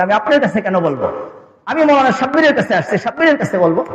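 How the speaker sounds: plain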